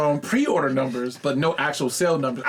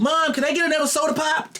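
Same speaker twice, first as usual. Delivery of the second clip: squeaky, very high nerdy gamer whine; 13 semitones higher than usual. Joking about gamers asking their mom for more soda: mocking nerdy gamer voice. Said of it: "you making fun of us?".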